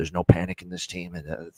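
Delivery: put-on voice, quiet, soft, low and raspy. Hockey coach talk about the team, in soft, raspy Joel Quenneville voice. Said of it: "that's my Joe Quenville voice right there. ... it's a soft, raspy voice".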